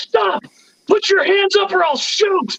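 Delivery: very high, drawn-out, yelled shout. Retelling how a drunk Albert shouted down the hallway: imitating Albert shouting. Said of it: "so he just shouts".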